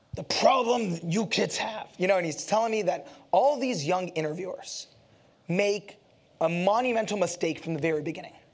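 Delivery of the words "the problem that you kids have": put-on rough, blunt, gruff voice with Brooklyn accent. Retelling advice an interviewer gave: imitating Larry's gruff Brooklyn voice. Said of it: "he has that gruff, you know, Brooklyn voice".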